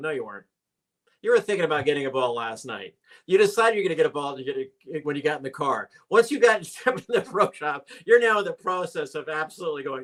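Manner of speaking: play-acted, know-it-all, sarcastic tone. Retelling a reply to a customer who wants a ball: retelling own sarcastic reply. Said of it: "I'm so sarcastic though".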